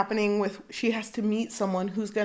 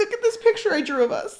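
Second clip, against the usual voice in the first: high, fast, eager, puppy-like voice. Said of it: "just like a puppy".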